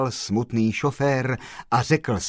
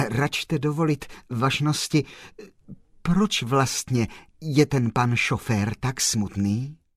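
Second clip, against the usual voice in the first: plain reading voice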